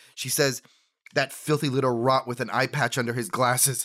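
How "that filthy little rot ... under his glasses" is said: ordinary talk, nothing marked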